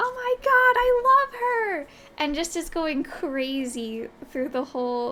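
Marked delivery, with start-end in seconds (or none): 0.0-1.9 very high, loud, ear-splitting, frantic fangirl scream. Recalling someone bursting from the VIP section during a set, re-enacting her scream. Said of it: "just starts screaming".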